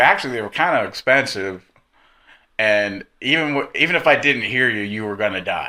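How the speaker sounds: normal talking voice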